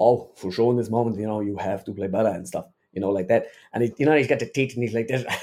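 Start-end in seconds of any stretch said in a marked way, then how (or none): 0.0-2.3 deep, crackly voice, dropped low. Showing how an impression sounds: Jürgen Klopp impression. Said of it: "when I'm doing Klopp".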